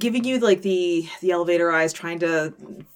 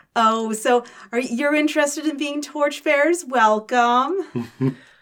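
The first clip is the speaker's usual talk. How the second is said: higher-pitched middle-aged woman's voice; 7 semitones higher than usual. The narrator voices the woman checking the players' tickets, in a middle-aged woman voice. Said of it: "a middle-aged woman there checks your tickets".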